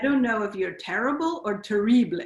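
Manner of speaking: put-on French accent. Retelling what a visitor to the studio said: imitating a french accent. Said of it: "With an accent".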